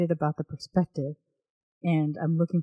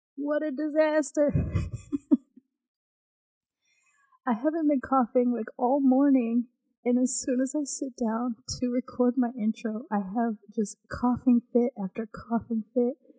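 out of breath, much higher voice; 7 semitones higher than usual. Podcaster trying to record her intro after repeated coughing fits: out of breath after coughing. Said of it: "I'm completely out of breath right now".

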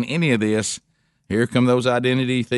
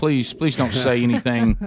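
mock anxious, worried pleading tone. Imitating a mom watching her kid at a microphone: imitating a worried mom pleading. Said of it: "like somebody's mom sitting over there watching their kid".

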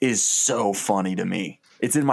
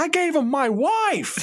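mock very high, drawn-out outraged crowd shout. Pitching a short film scene where an angry mob turns on him: angry mob yelling. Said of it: "people start yelling things like".

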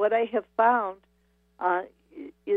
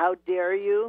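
big thundering booming voice. Telling the creativity myth of Eve and the apple, voicing it in a booming voice. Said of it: "a booming voice".

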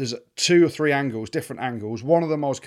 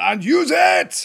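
weird, very high, squeezed and creaky voice; 9 semitones higher, 6 dB louder than usual. Retelling how the referee called out during the game: imitating Andrew Brace's weird voice. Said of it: "the way he was like".

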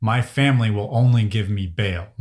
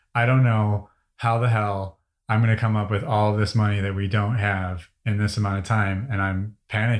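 plain

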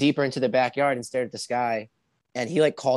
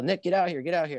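mock yell, pitched higher; 6 semitones higher than usual. Retelling how Chris called from outside: imitating Chris yelling. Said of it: "I hear Chris yell".

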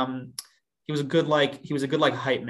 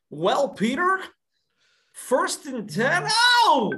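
very high, swooping, drawn-out call; 14 semitones higher, 4 dB louder than usual. Showing listeners who don't know him: Bob Menery voice. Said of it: "I gotta get in the voice".

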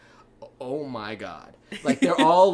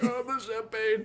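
soft, queasy, nauseated voice, pitched up; 9 semitones higher, 6 dB quieter than usual. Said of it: "he's feeling, like, queasy".

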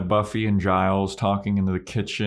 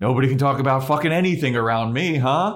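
mock-annoyed jab, louder; 5 semitones higher, 4 dB louder than usual. Retelling what a woman said to the group, imitating her annoyance. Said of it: "And then she gets annoyed".

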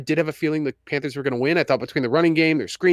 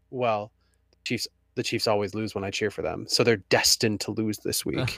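mock-deadpan delivery, lower pitch, quieter; 6 semitones lower, 5 dB quieter than usual. A parent quoting their eight-year-old son about the Chiefs game, imitating a deadpan son.

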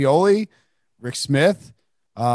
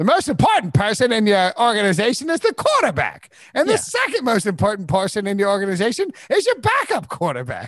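high, swooping TV football analyst delivery; 7 semitones higher than usual. Retelling a borrowed impression of Charlie Casserly on NFL quarterbacks: Charlie Casserly impression. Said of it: "a great impersonation of Casserly".

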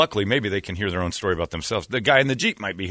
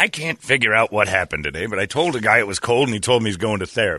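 ordinary talk

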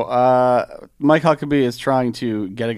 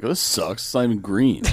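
normal talking voice

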